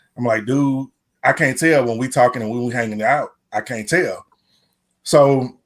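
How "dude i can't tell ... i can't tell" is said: normal talking voice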